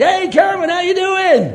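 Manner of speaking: cheery, bright, upbeat, very high-pitched and loud. Retelling answering a phone call from their sister, retelling an upbeat greeting. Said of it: "I was upbeat".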